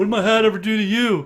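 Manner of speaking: loud, high, belted-out wrestler griping voice. Retelling how JBL reacted after his hat was slapped: imitating JBL. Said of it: "And J B L's like".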